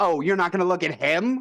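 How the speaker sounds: high, loud yell. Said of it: "just yell".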